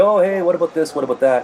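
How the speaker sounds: high, loud, complaining tone. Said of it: "this guy's complaining to the referee".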